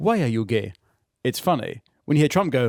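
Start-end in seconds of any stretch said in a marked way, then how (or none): 0.0-0.7 deep, low, dead serious voice. Imitating a Ugandan man asking a question: deeply serious Ugandan man impression. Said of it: "Deeply serious".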